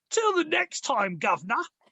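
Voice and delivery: slight put-on Cockney accent. Repeating the other speaker's sign-off in a cockney accent. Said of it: "There was a bit of Cockney going in there".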